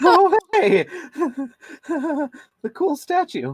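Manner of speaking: very high, panicked, blurted delivery. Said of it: "in a panicked voice".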